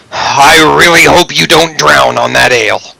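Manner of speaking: plain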